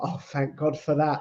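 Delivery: relieved exhale. Retelling own answer after hearing praise: imitating a relieved exhale. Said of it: "the exhale".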